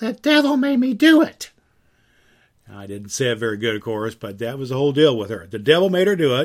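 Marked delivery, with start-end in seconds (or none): 0.0-1.5 very high-pitched, drawn-out female voice. Imitating what a woman always used to say, in a high-pitched voice. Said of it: "she would just in a high pitched voice".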